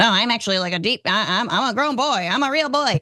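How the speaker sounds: mocking parody voice, stumbling and tripping over words. Mocking a commentator's real voice with the bass taken away: mocking high-pitched voice. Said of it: "he actually just talks like this, and it's incredibly high and it's high pitched".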